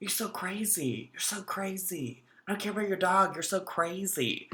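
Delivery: barely audible, very quiet muttering under breath. Retelling what a man said as he drove off, imitating muttering under breath. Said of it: "he is muttering under his breath".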